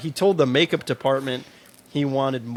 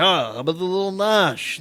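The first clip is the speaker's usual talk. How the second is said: put-on gruff New York accent, pitched higher; 5 semitones higher than usual. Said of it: "he's got that like gruff voice".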